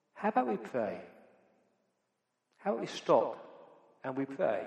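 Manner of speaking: quiet, soft, unassuming, gently offered. Retelling a committee member's suggestion to pray, imitating a quiet voice. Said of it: "he just said in a quiet voice".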